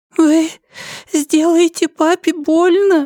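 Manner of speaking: quavering, faltering, trembling little voice, very high. A crying girl answers the inquisitor who soothed her, in a trembling, babbling voice. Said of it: "дрожащим голосом пролепетала она".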